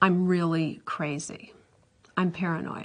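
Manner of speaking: mock grave, earnest, intense tone. Retelling what someone said about himself over dinner: imitating a serious, intense tone. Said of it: "in a very serious, intense way".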